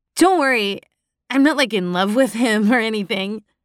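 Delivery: light, playful, teasing tone. A woman answering the narrator's unspoken thought, playful. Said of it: "she said playfully".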